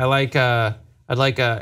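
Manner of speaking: plain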